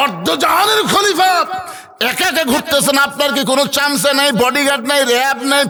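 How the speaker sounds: fervent, high preacher-style shout.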